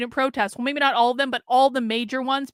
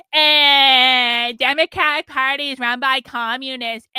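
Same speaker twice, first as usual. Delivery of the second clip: play-acted, very slow, scoffing, dismissive, drawn-out eh; 5 dB louder than usual. Mocking how conservatives answer warnings about communists; mocking conservatives' dismissive tone. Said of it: "that's exactly the tone of voice they use".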